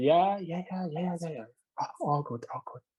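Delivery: put-on whisper. Retelling a new colleague's replies at work: imitating someone whispering. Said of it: "he was always, like, whispering like this".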